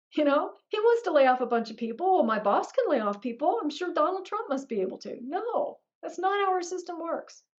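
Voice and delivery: high, fired-up rant, pushed high.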